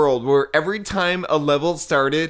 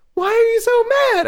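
very high, not quite nailed puppet voice; 4 dB louder than usual. Imitating a puppet who asks why someone is mad: bad Elmo voice. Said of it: "I can't do an Elmo".

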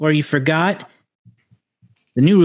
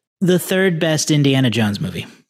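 usual speaking voice

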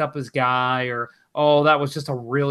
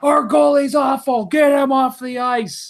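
mock yelling, very high-pitched; 11 semitones higher, 4 dB louder than usual. At a hockey game, retelling the guy behind him standing up to yell; retelling a fan's yell. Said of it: "this guy behind me stands up and yells".

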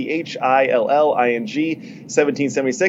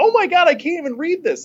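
high mock shriek of shock. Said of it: "one of the moms just shrieked out like".

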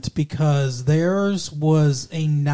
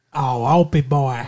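put-on Southern accent; 2 semitones lower than usual. Listing names in conversation, the speaker says one in a Southern accent. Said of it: "that was Southern".

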